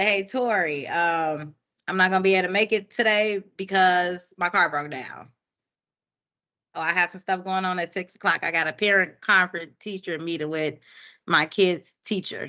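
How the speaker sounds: plain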